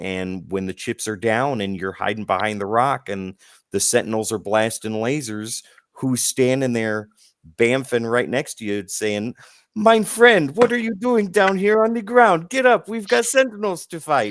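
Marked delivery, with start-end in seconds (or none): 9.7-14.3 high, loud, put-on Italian accent. Describing someone appearing beside you during a fight with Sentinels, in an Italian-sounding accent. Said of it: "why do you sound Italian there?".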